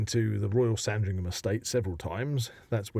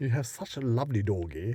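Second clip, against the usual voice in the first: put-on posh accent. Acting a scene, speaking to a dog's owner, in a posh voice. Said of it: "in our most posh voice".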